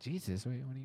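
put-on confused voice. Retelling own confused reaction to the other speaker: retelling own confusion. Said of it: "'Cause you confused me there".

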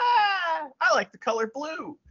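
squeaky voice, slow and sing-song. Recalling a match, speaker quotes Wada in a Mickey Mouse-like voice. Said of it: "He sounds like Mickey Mouse".

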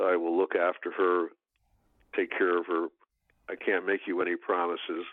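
ordinary talk

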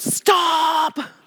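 urgent, high yell, drawn out on "stop". Retelling the first driving lesson with a son: retelling a yell. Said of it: "and I yelled".

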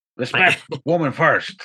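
mumbled, inarticulate, hardly articulated words. Quoting Nabi's answer to the old man: Nabi voice like inarticulate Sling Blade. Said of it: "Nabi's voice basically being somehow less articulate Sling Blade".

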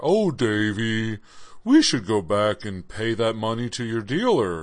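weird talking-dog voice, with the name drawn out. Retelling a talking dog's line to the boy Davy, in Goliath's voice. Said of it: "That is kind of the dog's voice".

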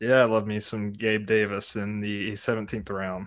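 ordinary talk

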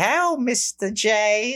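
very high, stock New York gal voice. Describing a game's secretary character, imitating her: stereotypical New York accent. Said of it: "doing the voice that is a very stereotypical".

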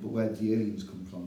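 ordinary delivery

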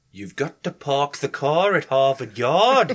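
put-on Newcastle Geordie accent. Speaker debuting a promised world-premiere accent for the others, in a Newcastle Geordie accent. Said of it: "The world premiere Newcastle accent".

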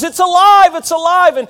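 high, loud, theatrical dramatic shout. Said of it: "It was very dramatic".

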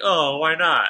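sarcastic. Replaying their own earlier comment to the other speaker: imitating own sarcastic tone. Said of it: "I was being sarcastic".

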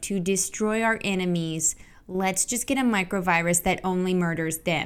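normal talking voice

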